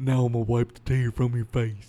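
put-on Southern accent. Imitating the movie demon flirting: put-on southern accent. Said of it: "you make him southern".

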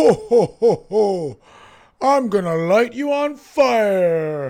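very loud, high, booming jolly laugh, "fire" stretched. In a role-play scene, answering a character who addresses him as Santa: Santa Claus voice.

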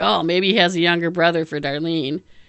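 normal talking voice

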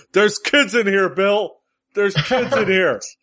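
very high screaming yell. Retelling how Robert Anthony yelled past the camera: imitating Robert Anthony screaming. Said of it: "Robert Anthony screaming".

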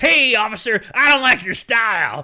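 loud, high, tough-guy bully shout. Retelling a movie scene where a biker bully starts shouting: imitating a bully shouting. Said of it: "he just starts shouting".

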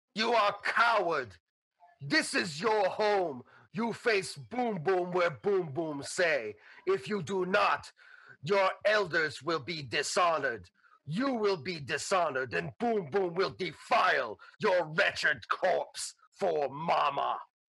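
furious, simmering, pissed off, dead serious tone. Narrating a game, voicing Boom Boom confronting the party, furious Boom Boom voice. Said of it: "And Boom Boom's like pissed".

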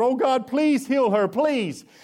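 high, begging, pleading voice, cried out. Preaching, acting out a cry out to the Lord. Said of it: "Moses cried out to the Lord".

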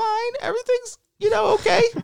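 squeaky high-pitched voice. Retelling answering a phone call from the father-in-law, in a squeaky voice. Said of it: "and probably a squeaky voice".

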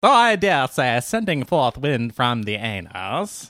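word anus drawn out in a regal manner. After watching The Crown, the speaker tries the Queen impression. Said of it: "That's how the Queen talks".

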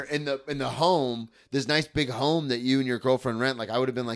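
usual speaking voice

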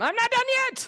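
mock very high-pitched roared outburst. Recounting snapping at someone who kept interrupting, retelling a roar. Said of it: "I just roared at him".

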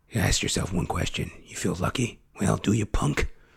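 near-whisper, hushed, breathy, all breath. Quoting a famous film line right after: Clint Eastwood voice. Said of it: "Clint Eastwood".

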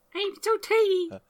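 very high, soft, squeaky tiny voice. Joking on a podcast call about being tiny: put-on tiny person voice. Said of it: "stick with that voice".

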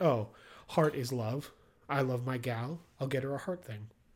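usual speaking voice

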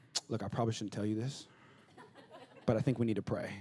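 put-on pious voice, low and quiet. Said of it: "it sounds really godly".

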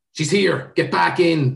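loud, high-pitched shout. Reading a story aloud, a character calls others back in: shouting. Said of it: "Stephen shouted".

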